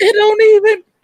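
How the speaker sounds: very high, loud outburst.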